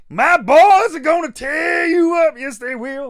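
very high, loud southern landowner voice. Recalling an old WCW wrestling manager, doing a Colonel Robert Parker impression. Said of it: "he was like a southern landowner".

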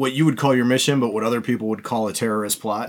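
ordinary delivery

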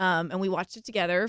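plain

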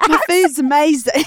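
put-on Southern American accent, pitched high. Repeating a quoted line from a show, speaker says it in a Southern-sounding accent. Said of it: "That's Southern".

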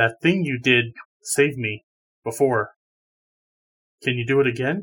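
hushed, confiding, quiet aside. Player's character steps over to a companion to ask a favor: hushed tone. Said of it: "in a hushed tone".

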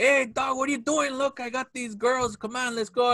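put-on character voice.

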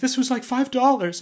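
very high, tearful crying voice. Parent retelling the son's reaction to something broken, imitating his son crying. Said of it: "and he's crying".

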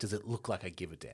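very soft, very low, irritated, annoyed retort. Retelling how he answers, imitating an annoyed retort. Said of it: "He's annoyed".

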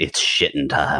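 muttered under breath. Retelling a man announcing as he shoved open a stall door, under his breath. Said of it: "it was kind of under his breath".

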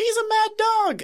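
slow, very high-pitched yell. Narrating a scene, the speaker voices Barney's line: yelling Barney impression. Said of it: "The Barney impression is getting worse".

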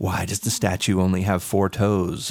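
put-on very ominous, low, foreboding delivery. Describing a show's mysteries, quoting a character, imitating an ominous tone. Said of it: "in this very ominous tone".

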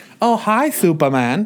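odd, very loud, high-pitched belting voice. Just told that your terrible accent sounds like someone else, play along with a Tommy Wiseau impression. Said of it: "you sound like Tommy Wiseau".

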